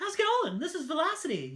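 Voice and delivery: surfer dude voice, very high and swoopy. Describing a guy heard on the CB radio years ago: imitating Velocity's surfer-dude voice. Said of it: "he tried to be a a surfer dude".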